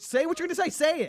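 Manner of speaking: mock very high, pushy, frustrated, demanding shout. Retelling past phone calls as a call screener: imitating own past shouting. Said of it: "were you shouting".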